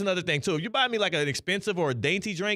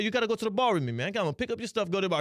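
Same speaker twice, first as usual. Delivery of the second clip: put-on Italian accent, pushy and forceful; 2 semitones higher than usual. Retelling what an older roommate said: Italian accent impression. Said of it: "Was that a good Italian?".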